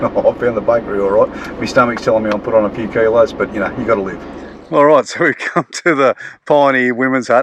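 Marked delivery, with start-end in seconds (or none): 4.7-7.4 words breaking up with giggles, laughing. Announcing where they've arrived, laughing while talking. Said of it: "I'm sorry, I'm laughing".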